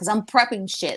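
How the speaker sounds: put-on thick New Jersey Italian accent. Retelling a phone call to a pizza place, the pizza guy answering in heavy Jersey Italian accent. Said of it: "cursing him out in his heavy Italian, like Jersey Italian accent".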